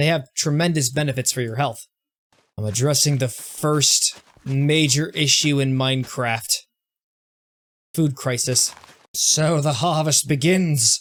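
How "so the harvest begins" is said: attempted Irish accent. Announcing the start of a harvest in Minecraft: attempt at an Irish accent. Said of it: "my attempt at doing an Irish accent?".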